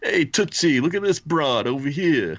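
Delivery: put-on very high-pitched New York workman voice, New York accent. Riffing on the name Captain Tootsie, in a New York construction worker voice. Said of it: "like some like New York like construction worker".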